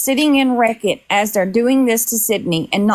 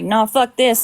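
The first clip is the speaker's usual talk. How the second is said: plain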